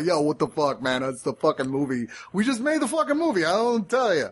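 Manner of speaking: put-on high-pitched Brooklyn accent. Describing an interview with Abel Ferrara: imitating Abel Ferrara's Brooklyn accent. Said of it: "this Brooklyn accent and guy".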